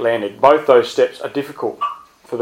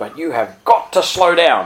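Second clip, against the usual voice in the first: put-on Scottish accent in an older man's voice; 4 semitones higher than usual. A new pastor quotes an older man who approached him afterwards: Mr. Tweedy Sr.'s Scottish voice. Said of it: "in his Scottish voice".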